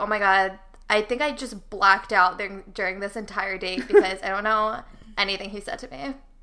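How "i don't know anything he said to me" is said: ordinary talk, nothing marked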